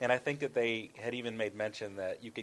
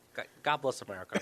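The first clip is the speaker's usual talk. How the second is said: dorky, uber nerdy put-on voice. Retelling the end of a prank phone call: uber nerdy voice. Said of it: "which sounded something like this throughout the entire thing".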